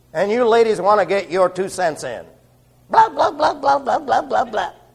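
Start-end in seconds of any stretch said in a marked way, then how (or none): 2.9-4.7 very high, piping, squeaky little voice. Mimicking ladies getting their two cents in, in a mock squeaky little voice. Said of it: "In that squeaky little voice that all men despise".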